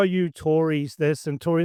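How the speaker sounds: ordinary delivery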